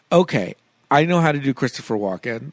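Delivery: plain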